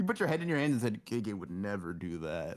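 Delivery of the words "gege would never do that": soft, slow, sad and down delivery. Retelling what another speaker said with head in hands: imitating someone sounding sad. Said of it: "Like, all sad and shit".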